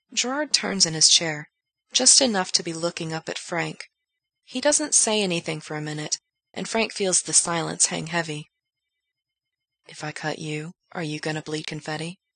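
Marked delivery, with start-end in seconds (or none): 9.9-12.2 half-serious, joking, quieter. After a long silence, [name] asks Frank a question, not entirely joking. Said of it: "in the wrong tone of voice for it to be entirely a joke".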